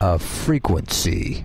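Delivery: theatrical, dramatic movie-style delivery. Trying to say frequency in a dramatic movie voice. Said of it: "I'm trying to say frequency in my movie voice".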